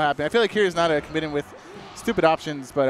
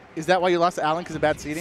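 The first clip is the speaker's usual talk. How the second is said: ordinary delivery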